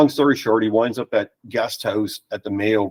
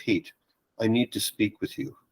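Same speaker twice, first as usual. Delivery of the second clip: put-on breathy, hushed, near-whispered Irish accent; 9 dB quieter than usual. Retelling a visitor's first words at the front door, in [name]'s Irish accent. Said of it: "in his Irish accent".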